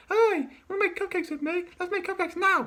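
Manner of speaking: as high as possible, loud cartoon character voice. Doing Pinkie Pie's lines, high-pitched Pinkie Pie voice. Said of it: "the most high pitched one".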